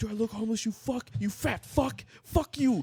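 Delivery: acted-out, very high-pitched, shrill screaming tirade. Retelling a confrontation with a regular at a car window: imitating someone screaming. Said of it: "he's just fucking screaming".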